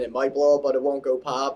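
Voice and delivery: ordinary delivery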